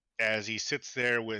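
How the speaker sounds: ordinary talk, nothing marked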